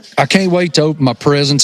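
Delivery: plain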